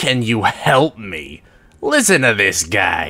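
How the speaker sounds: very deep demonic growl, laughing. A demon approaches and answers the offer of help, growling and laughing. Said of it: "The demon growls, laughing".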